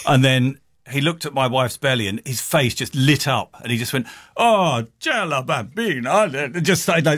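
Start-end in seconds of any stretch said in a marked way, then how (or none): 4.3-6.6 put-on Italian accent, delighted old man voice. Retelling what a man said on seeing the speaker's wife, old Italian man impression. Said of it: "I'm sorry about my Italian impression then".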